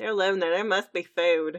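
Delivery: Texan-style accent. Saying a quoted line in the accent, as a friend just insisted: Texan accent. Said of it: "you got to say it in the accent".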